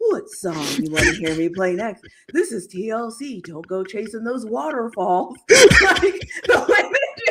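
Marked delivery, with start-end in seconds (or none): 0.0-5.4 half-whispery, hushed quiet storm late-night radio voice. Recalling the listener's old radio bit: late-night quiet storm dj half-whisper. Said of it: "like you're on like the quiet storm on the radio".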